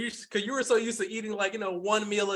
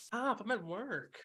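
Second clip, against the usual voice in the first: soft, giggly delivery through a little giggle; 3 semitones higher, 8 dB quieter than usual. Voicing a character answering a charming player: giggling while speaking. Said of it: "she does that little giggle and says".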